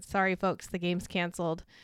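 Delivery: normal talking voice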